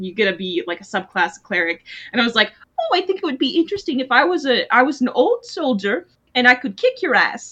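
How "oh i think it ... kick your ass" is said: put-on ladylike voice. Retelling leveling up their game character to a cleric subclass, in a lady voice. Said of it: "your lady voice, I love it".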